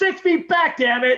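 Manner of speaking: acted, very high-pitched scream. Retelling a video skit with a son, imitating own yell. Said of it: "And I scream at him".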